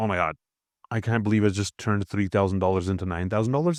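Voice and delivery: plain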